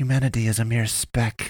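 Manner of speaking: spoken with a hiss. A restrained woman answers the priest's question, hissing. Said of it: "she hissed".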